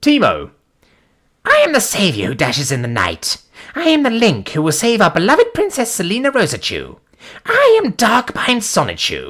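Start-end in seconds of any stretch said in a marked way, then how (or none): 1.4-9.3 high, swooping, sing-song cartoon hero voice. Speaker revives a character voice not done in a while, Sonichu character voice. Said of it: "it's been a long time since I did that voice".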